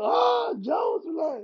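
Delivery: wild fanboy yelling, very high pitched and excited. Retelling their own reaction to meeting jon jones: imitating own excited yelling. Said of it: "I started going crazy too".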